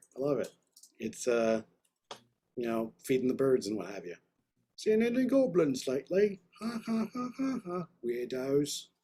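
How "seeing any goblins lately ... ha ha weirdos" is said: high, slow, drawn-out fake British accent. Reacting to a little intro, in a British accent. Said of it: "that's my British accent".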